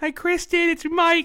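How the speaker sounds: put-on New York lady voice. Mocking how another guy phoned Kristen to apologize, in a mock New York woman voice. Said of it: "I don't know why I'm a fucking woman from New York".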